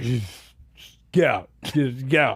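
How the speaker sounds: half-dead, zombie-like, dismissive delivery. Retelling what Jay says coming out for candy: imitating Jay in zombie mode. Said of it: "he's in zombie mode".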